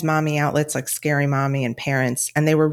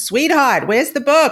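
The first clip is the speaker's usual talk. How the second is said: put-on, high, loud old New York accent; 10 semitones higher, 5 dB louder than usual.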